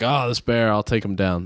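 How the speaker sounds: plain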